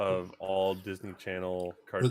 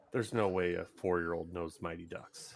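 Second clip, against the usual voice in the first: ordinary talk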